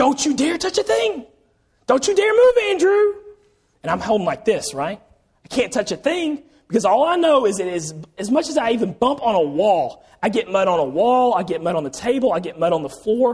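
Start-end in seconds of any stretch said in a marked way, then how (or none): 0.0-3.1 mock very high, rising, shrieking scolding scream. Retelling coming home muddy as a child, imitating a woman screaming. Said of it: "what does she start screaming at you?".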